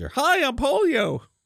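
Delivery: very high, toon-like cartoon character voice. Joking that a disease name sounds like a cartoon character, in a cartoon character voice. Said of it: "The polio sounds like a cartoon character".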